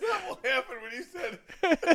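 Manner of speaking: quiet, slow, laughing voice. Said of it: "can't stop laughing".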